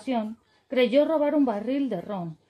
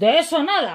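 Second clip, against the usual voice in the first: loud, roaring, bellowing pirate voice; 3 semitones higher, 6 dB louder than usual. Reading a story aloud, voicing the pirate's reply to the boy: roaring. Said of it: "bramó el pirata".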